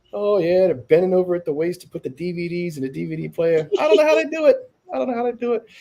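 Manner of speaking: put-on voice pushed very high in pitch. Retelling a comedy bit about a mother's job: Bill Burr impression. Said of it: "I love your impression of Bill Burr".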